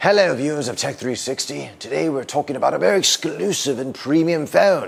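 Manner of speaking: put-on British accent. Introducing a premium phone on a tech channel, in a put-on British accent. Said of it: "That's why I'm talking in a British accent".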